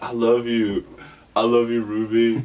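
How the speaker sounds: put-on yelling man. Speaker retelling a man yelling at ruby during a comedy show, imitating his yelling. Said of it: "yelling at shit to her".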